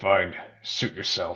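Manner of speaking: inhuman snarl. Answering the group in character with an inhuman snarl. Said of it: "a weird, like, snarl that just doesn't look like it would come from a human".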